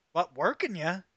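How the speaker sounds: smile heard in the voice. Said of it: "I can hear the smile in your voice".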